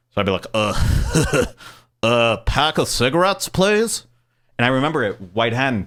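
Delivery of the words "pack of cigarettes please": very slow, halting, dragged-out uh-uh drawl. Retelling buying cigarettes as a teen: imitating Beavis and Butthead. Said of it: "Why are you guys talking like Beavis and Butthead?".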